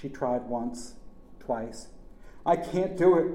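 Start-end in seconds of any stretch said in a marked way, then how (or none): 2.5-3.3 high, loud, panic-stricken screaming cry. A wife, failing to climb out onto the bumper, screams to her husband: panicked scream. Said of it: "she screamed".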